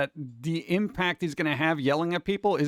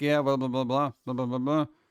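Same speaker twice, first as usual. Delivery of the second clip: mock flat monotone chatter, pitched lower; 3 semitones lower than usual. Retelling how they greet people in real life: imitating own monotone greeting. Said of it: "Very monotone".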